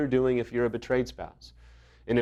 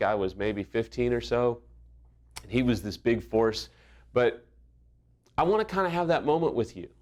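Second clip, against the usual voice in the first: plain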